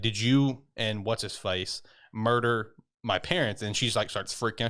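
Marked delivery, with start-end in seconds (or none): none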